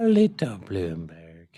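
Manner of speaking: Irish brogue. A host reading vote counts repeats a candidate's name: Irish accent. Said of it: "funnier when you say Bloomberg's name with an Irish accent".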